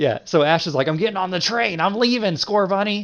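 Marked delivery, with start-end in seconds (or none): 0.9-3.1 put-on sounds like an old man. Retelling an anime scene where Ash leaves on the train: imitating Ash sounding eighty years old. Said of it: "That's why he sounds like that?".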